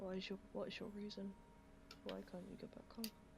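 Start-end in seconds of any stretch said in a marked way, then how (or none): 2.0-3.1 soft, fast mumble. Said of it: "Sorry, I'm mumbling".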